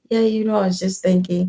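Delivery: softly spoken, soft feminine voice. Recounting a dinner with a man, imitating his soft feminine voice. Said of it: "talks in his feminine voice, like soft voice".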